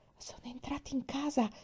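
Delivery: very soft faint whisper. A girl speaks to another girl beside a chained dog, whispering. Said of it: "bisbigliò Mary".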